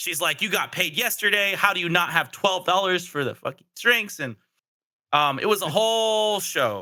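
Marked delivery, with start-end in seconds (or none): 0.4-4.2 play-acted heated, angry woman's voice mid-argument. Retelling a couple's argument at the store: imitating an angry girlfriend arguing. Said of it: "started busting out in an argument".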